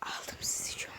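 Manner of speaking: hushed, soft, unvoiced whisper.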